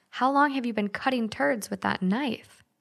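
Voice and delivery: ordinary talk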